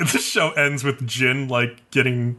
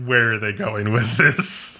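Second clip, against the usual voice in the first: ordinary talk, nothing marked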